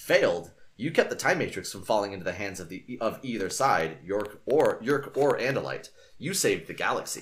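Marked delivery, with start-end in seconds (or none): none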